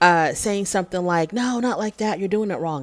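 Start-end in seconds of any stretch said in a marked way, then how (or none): 1.3-2.8 irritated, angry, scolding tone. Retelling what she told him while he took a selfie: imitating an angry tone. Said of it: "she talks to him with anger in her voice".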